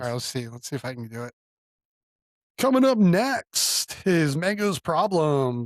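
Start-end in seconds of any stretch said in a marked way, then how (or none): 2.6-5.7 very slow, drawn-out radio announcer voice. Speaker tries out their radio voice when asked, radio announcer voice. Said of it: "I want to do my radio voice now".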